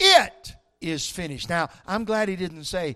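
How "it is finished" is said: first word "it" stressed. Showing how stressing different words changes meaning: stress on "it". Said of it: "let's emphasize the first word".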